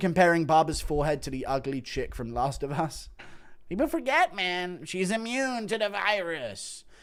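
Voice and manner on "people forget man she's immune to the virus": deliberate, slow, drawn-out, pitched-up musing voice. Introduced as an impression during a list of classic moments, Joe Rogan impression. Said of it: "Impression of Rogan".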